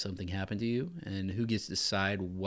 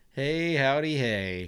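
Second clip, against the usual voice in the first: loud, high hollering cartoon cowboy voice; 6 semitones higher, 8 dB louder than usual. Podcast host greeting listeners at the episode's start, in Woody from Toy Story voice. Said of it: "that was Woody from Toy Story".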